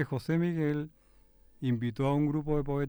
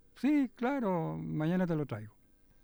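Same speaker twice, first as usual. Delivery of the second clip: put-on high, slow, cocky, dismissive teenager voice. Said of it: "como un adolescente así medio sobrado".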